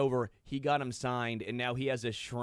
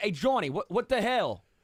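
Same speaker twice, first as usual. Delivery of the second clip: fake Boston accent, higher and louder; 8 semitones higher, 5 dB louder than usual. Hosts playfully calling out to Johnny, acting like they're from Boston: fake Boston accent. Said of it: "Act like we're from Boston".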